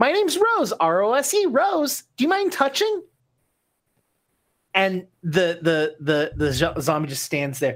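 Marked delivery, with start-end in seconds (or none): 0.0-3.0 very high-pitched character voice. Voicing Rose introducing herself to a zombie: Rose's character voice. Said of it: "reaches out and goes".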